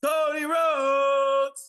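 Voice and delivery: booming, shrill, very loud, high ring-announcer yell. Asked to introduce the champion with their best impression: yelling ring-announcer introduction. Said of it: "I'm in a hotel yelling".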